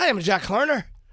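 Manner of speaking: put-on high Irish accent. Showing how Burt Reynolds wanted to play the character: Burt Reynolds Irish accent. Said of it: "He was doing an Irish accent".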